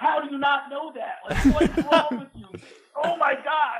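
put-on shrill, very high, incredulous, exasperated yelling. Retelling yelling at a phone during trivia questions; retelling own yelling. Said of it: "I'm yelling at my phone".

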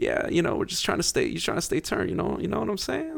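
very light, airy, hushed, very quiet voice. Mocking how Jalen Green, a Gen Zer, talks: light Jalen Green impression. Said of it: "Very light".

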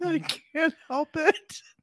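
high, giggling, laughing while talking. Reacting after the other speaker repeats "a rooster": laughing while talking. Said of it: "Stop laughing".

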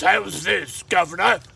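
mock British voice, fake English accent. Making sports picks, the speaker switches to a put-on British accent. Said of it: "British voice".

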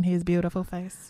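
ordinary talk

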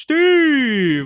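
very high, loud, long, drawn-out yell. Retelling what a game character says when clicked: imitating Steve shouting loudly. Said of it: "like, really loudly".

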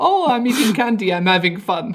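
high, loud, comedic lady voice. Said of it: "doing an impression of the, uh, lady from Austin Powers".

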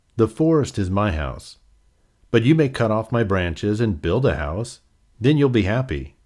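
plain

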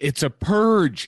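high scream. Retelling what someone screamed while running up: imitating Devin screaming. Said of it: "he kept screaming".

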